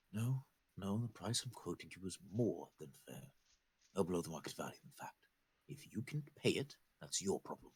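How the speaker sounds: soft, low, hushed undertone. A narrator voices a doctor's overheard end of a conversation, in a low, quiet voice. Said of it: "his voice comes out in a low, quiet tone".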